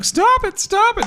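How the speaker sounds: play-acted very high, drawn-out crying-out voice. Acting out a beaten mime crying out: imitating a mime crying out. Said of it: "crying out".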